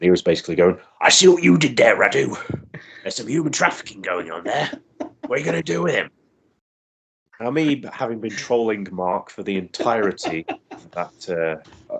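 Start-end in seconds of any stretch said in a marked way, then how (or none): 1.0-6.1 quick, high, put-on Yorkshire commentator voice. Act out a man on the commentary still doing his Yorkshire Lord Alfred Hayes voice. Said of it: "doing his uh, Yorkshire Lord Alfred Lord Alfred Hayes voice".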